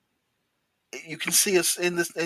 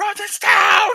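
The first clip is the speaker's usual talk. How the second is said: high, loud, siren-like scream. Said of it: "I was just screaming down the road".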